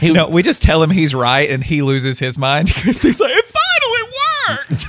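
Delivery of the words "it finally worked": very high put-on character voice. Imagining a friend's reaction to being told he's right, in a Barney Fife voice. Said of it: "That's a very good Barney Fife voice".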